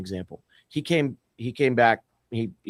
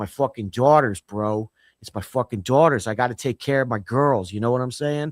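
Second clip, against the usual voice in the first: put-on Philadelphia accent, attempted. Speaker quotes Jimmy, who moved up to Philly, imitating Jimmy's Philly accent. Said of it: "I'm gonna try to do the accent".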